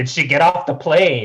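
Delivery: frantic, urgent, very loud, high-pitched screaming yell. Retelling watching a season finale live, retelling screaming at the TV. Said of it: "screaming at the thing".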